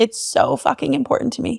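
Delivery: choked, close to tears. Speaking about why they do and teach this work: choking up. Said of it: "I'm going to cry".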